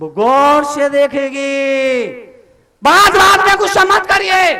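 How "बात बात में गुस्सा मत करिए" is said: loud shouting, preacher-style. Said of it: "चिल्लाने के लिए तरुण सागर बहुत है".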